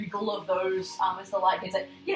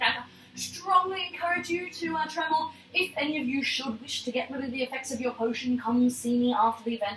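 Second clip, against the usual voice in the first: witchy character voice; 4 semitones higher than usual. Voicing the witch judge in the funny pointed hat: voicing the witch judge. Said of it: "She's like".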